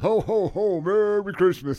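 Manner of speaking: high, loud, jolly booming put-on voice.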